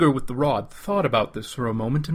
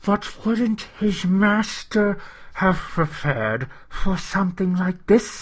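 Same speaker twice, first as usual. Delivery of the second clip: higher, hissing voice full of gurgles; 8 semitones higher than usual. Mototu countering Gar, hissing, bubbling voice. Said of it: "his voice hissing and bubbling".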